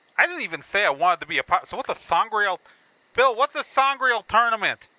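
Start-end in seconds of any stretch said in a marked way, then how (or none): 3.2-4.8 high-pitched, loud yelling. Calling to bill while right in his ear, yelling. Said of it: "I'm yelling".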